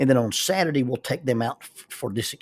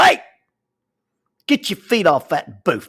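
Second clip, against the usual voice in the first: sudden loud yelling with swooping pitch; 4 semitones higher, 7 dB louder than usual. Retelling how a voice in the restaurant yelled: imitating someone yelling. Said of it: "this voice in the restaurant yells".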